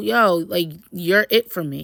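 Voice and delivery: plain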